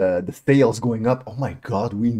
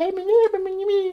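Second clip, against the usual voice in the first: very high, slow, put-on cute girlish voice. Describing the voice expected after a raid: imitating a cute girl voice. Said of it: "I expected, like, a, a cute girl".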